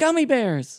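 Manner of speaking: shrill, very high, very loud war cry. Retelling a movie scene where a character yells: imitating a character yelling. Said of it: "And then he yells".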